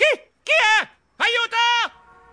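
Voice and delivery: very high, drawn-out, terrified scream. Grabbed over the eyes at his front door, a man is screaming. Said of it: "Io urlai".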